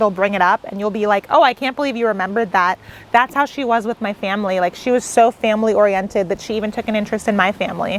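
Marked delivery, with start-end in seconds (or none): none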